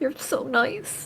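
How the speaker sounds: choked up, teary joy, very soft and high. A player's character turns to an old woman who complimented him, on the verge of tears of joy. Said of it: "like he wants to cry tears of joy".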